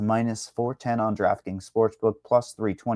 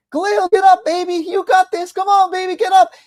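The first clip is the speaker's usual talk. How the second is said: very high, shrill, loud yell; 7 dB louder than usual. Retelling a fight, the speaker acts out the fighter's mom in the crowd, imitating a mom yelling. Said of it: "his mom's like yelling at him in the crowd".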